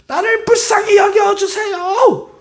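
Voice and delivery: very high, shrill shout. Retelling how the blind man cried out even louder: imitating a blind man shouting louder. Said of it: "더 크게 소리를 치는 거야".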